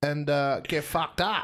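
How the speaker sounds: put-on Australian accent.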